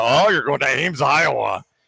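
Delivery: condescending, lofty, disdainful tone. Imitating the broadcaster's disdain about where game day is: condescending Al Michaels impression. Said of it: "so condescending about".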